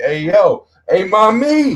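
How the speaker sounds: very slow, drawn-out, high catcall. Acting out a man calling to a woman: imitating a catcaller. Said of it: "Motherfucker like".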